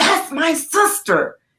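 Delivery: slow, high impassioned call.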